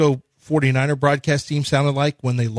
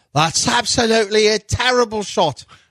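high-pitched, fake Irish accent; 7 semitones higher than usual. Asked how they would say it in Ireland, trying out accents; mock Irish accent. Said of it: "In Ireland?".

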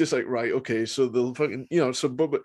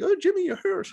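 put-on squeaky, very high-pitched Southern accent. Retelling a wrestler's words from a WCW match, in a high-pitched southern voice. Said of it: "in that sort of high-pitched southern voice".

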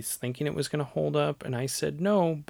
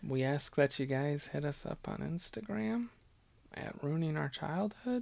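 sounding very, really sad; 8 dB quieter than usual. Ending the podcast on a somber note and asking listeners to get in touch, sounding so sad. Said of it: "you sound so sad".

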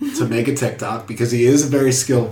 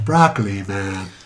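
eerie, ghostly, haunting delivery; 3 semitones lower than usual. Trying out a short catchphrase that the other speaker calls haunting: haunting. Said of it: "That sounded haunting".

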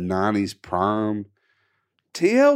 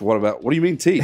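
usual speaking voice

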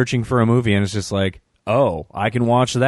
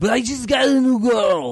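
put-on slurred impression voice; 12 semitones higher than usual. Retelling a man's upset reply in a word-slurring Arnold Schwarzenegger voice. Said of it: "word-slurring Arnold Schwarzenegger voice there".

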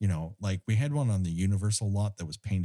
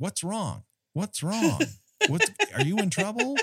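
very high, swooping shout; 13 semitones higher than usual. Recapping a film scene where everyone shouts at a man underwater, imitating a shout. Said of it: "is shouting like".

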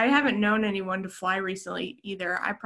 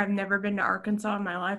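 usual speaking voice

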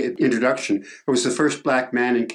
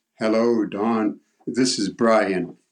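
slow, deep voice. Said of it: "I heard this deep voice".

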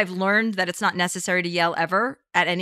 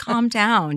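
plain

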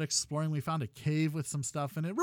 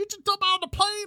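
clumsy, high, horrible put-on Rhode Island accent; 3 dB louder than usual. Retelling how he reacts to a surprise jump, in a bad Rhode Island accent. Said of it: "he does it with that Rhode Island accent".

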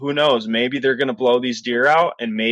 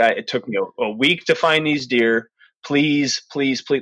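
mock pleading, acted begging. Retelling begging two backpackers not to go into the basin, re-enacted pleading. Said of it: "I begged these two people".

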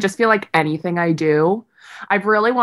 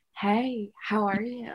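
very slow, drawn-out, every word dragged out; 11 dB quieter than usual. Retelling a dating episode, imitating Kourtney Kardashian's voice. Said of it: "Why do you talk like that?".

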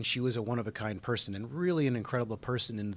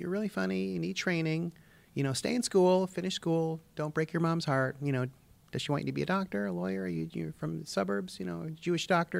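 teasing voice, high-pitched and creaky; 6 semitones higher than usual. Retelling what a producer said at an audition: Joyce Sloan impression. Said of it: "I feel like I'm doing her".

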